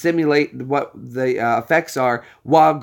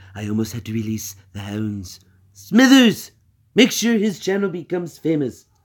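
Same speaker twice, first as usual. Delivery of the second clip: put-on cartoon-villain voice with swooping pitch; 2 semitones higher than usual. Thanking a viewer for tuning in and subbing, in a Mister Burns voice. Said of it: "We'll do Mister B- Mister Burns here".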